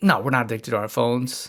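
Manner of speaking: dry, quick, sarcastic, snappy tone. Retelling own snap reply to a question in bed: imitating own sarcastic reply. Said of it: "Almost in a sarcastic way".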